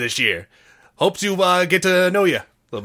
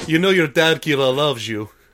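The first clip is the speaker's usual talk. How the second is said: put-on dad voice with Russian accent; 2 semitones lower than usual. A dad giving his daughter Kira condoms as she leaves home, Russian accent. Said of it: "I forgot you were inexplicably Russian".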